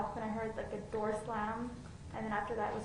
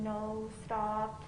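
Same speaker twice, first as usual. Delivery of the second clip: ordinary talk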